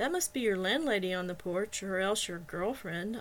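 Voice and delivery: playfully, jokingly teasing. First-person narrator speaks to a companion, teasing. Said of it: "I teased".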